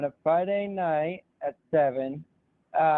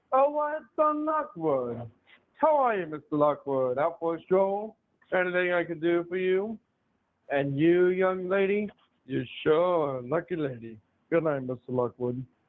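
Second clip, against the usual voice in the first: stagey, theatrical line reading with swooping pitch. Performing a line from an upcoming play for the others: acting a stage line. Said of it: "line real quick?".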